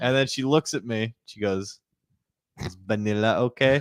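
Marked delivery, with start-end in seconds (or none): 2.6-3.8 put-on non-native English accent, lower. Retelling what the worker at the order window asked: imitating a non-native english accent. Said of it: "she had an accent. I will do it".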